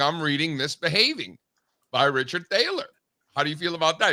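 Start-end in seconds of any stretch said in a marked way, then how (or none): none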